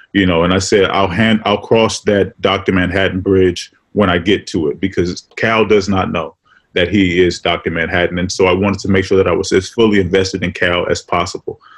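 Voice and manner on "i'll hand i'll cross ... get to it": plain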